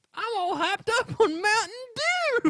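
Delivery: heavy Southern accent, very high, shrill and loud. Imitating a boy, in a thick Southern accent. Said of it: "children have very thick Southern accents".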